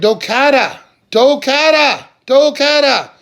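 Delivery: high, very loud yelling. Retelling searching for their lost dog, the speaker re-enacts yelling the dog's name. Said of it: "So I'm yelling".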